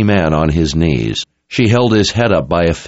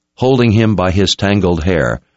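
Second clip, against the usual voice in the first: ordinary delivery, nothing marked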